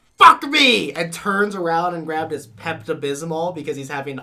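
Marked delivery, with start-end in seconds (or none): 0.2-0.9 put-on scream-like shout, higher and louder. Retelling a movie captain's outburst at his officer: imitating a scream. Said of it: "just screams".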